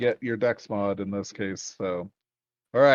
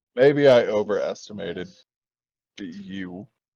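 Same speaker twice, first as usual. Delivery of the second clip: put-on disappointed fatherly tone; 4 dB louder than usual. Retelling a man looking down at him after he goofed, mock fatherly disappointment. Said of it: "he hit you with that fatherly".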